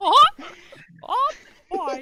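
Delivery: loud, high-pitched cartoon voice. Joking with friends about a Mickey Mouse sniper: Mickey Mouse impression. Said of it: "the only Mickey Mouse impression I can do".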